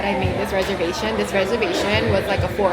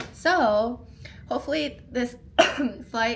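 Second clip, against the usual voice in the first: cracked voice, breaking mid-phrase; 4 semitones higher, 5 dB quieter than usual. Talking about body aches before a flight, voice cracking. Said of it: "oh my god, my voice cracked".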